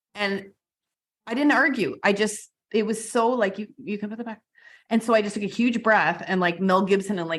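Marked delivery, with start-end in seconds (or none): 3.6-4.5 hushed, very soft, perfectly serene voice. Retelling a voice heard after an injury: imitating a calm, quiet voice. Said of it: "the most calm, quiet thing".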